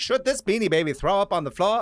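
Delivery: put-on old-timey 1920s voice. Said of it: "that's the voice".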